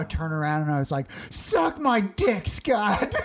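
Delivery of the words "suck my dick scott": acted very slow, high, stretched-out, drawn-out yell. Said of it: "And I screamed it".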